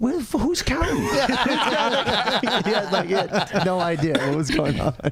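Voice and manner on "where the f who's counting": high, baffled, bewildered outburst. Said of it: "my dad's sitting side stage like".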